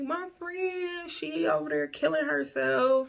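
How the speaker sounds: very high, tearful, crying, panicked. Retelling running to the front door, imitating own past crying. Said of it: "running to the front door crying".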